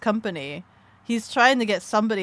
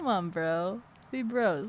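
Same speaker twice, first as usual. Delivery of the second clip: mock smirking tone, quieter; 7 dB quieter than usual. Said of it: "And then that slow smile".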